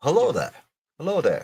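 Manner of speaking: put-on spoken in a British accent. Helping someone fix an accent by giving an example: Obi-Wan Kenobi impression. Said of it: "think of like Obi Wan Kenobi".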